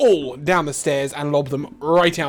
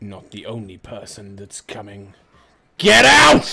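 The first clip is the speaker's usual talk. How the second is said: low, loud, deep rumbling giant voice; 6 semitones lower, 6 dB louder than usual. Voicing an eleven-foot half-giant confronting the group: rumbling low voice. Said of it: "you guys hear a rumbling, low voice".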